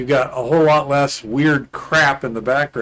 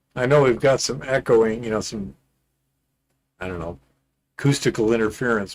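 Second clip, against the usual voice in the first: ordinary talk, nothing marked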